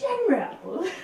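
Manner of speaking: very high, smarmy voice. Voicing a soldier greeting the general: smarmy voice. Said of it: "His little smarmy voice".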